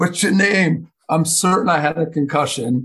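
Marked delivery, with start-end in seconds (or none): 0.0-0.9 put-on Geordie accent from northeast England, pitched up. Retelling what a man asked him on the bench, in a put-on Geordie accent. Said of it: "He had a Geordie accent".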